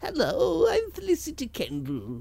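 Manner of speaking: sing-song voice swooping up and down. Doing an impression of an actress for the others: Felicity Kendal impression. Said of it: "That's how she sounds".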